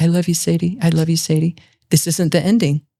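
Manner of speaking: muttering under breath. Mother recalling what she told her rejecting teenage daughter, retelling a murmur under breath. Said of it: "under my breath".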